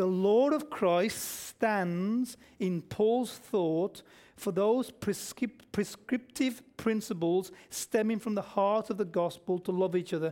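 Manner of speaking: careful, unhurried reading aloud.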